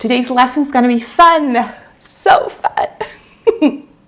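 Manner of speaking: talking through laughter. Opening an English lesson video for viewers, laughing while talking. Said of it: "I can't stop laughing".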